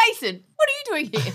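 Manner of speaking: very high-pitched, familiar, friendly voice. Imitating the other speaker arriving at the door: imitating the other speaker's greeting. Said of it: "you're always like".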